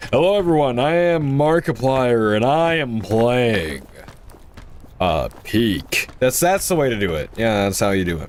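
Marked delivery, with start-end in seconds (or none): 0.1-6.1 put-on, big channel intro host voice. Told they sound like Markiplier, greeting everyone in a Markiplier impression. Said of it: "you sounded like Markiplier / steal his voice".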